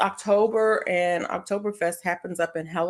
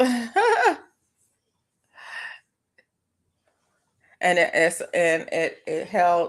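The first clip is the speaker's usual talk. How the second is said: stuttering, much slower. Explaining the Oktoberfest dates and location: stuttering. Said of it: "I'm stuttering".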